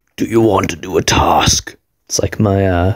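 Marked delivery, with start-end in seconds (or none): 0.2-1.8 put-on horror villain voice. Announcing the next task to the others: Jigsaw voice. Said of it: "my Jigsaw voice".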